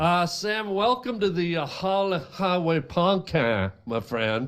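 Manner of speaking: put-on Cajun accent. A podcast host welcomes a guest, in a cajun accent voice.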